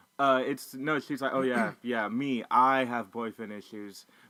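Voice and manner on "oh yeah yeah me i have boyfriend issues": slow, drawn-out, snarky sarcasm. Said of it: "her being snarky".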